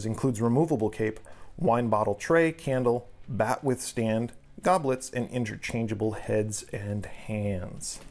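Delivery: ordinary talk, nothing marked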